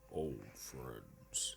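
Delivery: very deep, soft, hushed creepy killer voice. Quoting an actor's line the way he does it, in a deep creepy voice. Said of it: "it's so deep".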